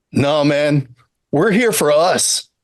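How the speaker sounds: put-on laid-back surfer dude voice. Answering a question while playing a bit, in a laid-back surfer dude voice. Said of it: "really laying into the like surfer dude mentality".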